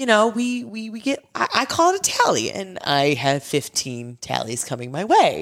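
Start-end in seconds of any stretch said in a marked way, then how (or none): 0.0-2.5 high, sweet, cutesy voice. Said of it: "like, the cutest terms ever".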